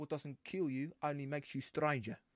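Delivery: put-on South African accent. Showing off an impression to another speaker, in a south african accent. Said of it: "so you're doing South African".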